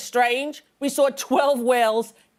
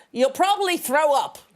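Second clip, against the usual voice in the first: put-on Australian accent; 2 semitones higher than usual. Retelling the whale-watching crew's speech: imitating an australian accent. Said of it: "I apologize for the accent".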